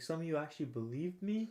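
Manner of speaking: words broken up by laughter. Retelling a mentor laughing at listeners who believed him: imitating someone laughing while talking. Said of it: "laughing, like, his ass off".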